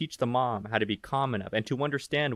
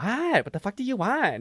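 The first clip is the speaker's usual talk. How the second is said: irritated, frazzled, annoyed voice, pitched up; 8 semitones higher than usual. Speaker retelling how their mom answered them at the store, imitating frazzled annoyed mom. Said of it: "she she was just immediately frazzled".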